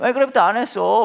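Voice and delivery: put-on high, loud, stubborn childish insistence.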